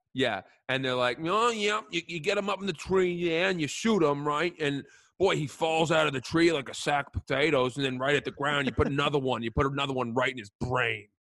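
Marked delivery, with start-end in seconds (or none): 1.2-11.0 put-on near-Bostonian accent. Describing bear hunters, the speaker imitates them in a near-Bostonian accent. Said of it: "It's close to Bostonian".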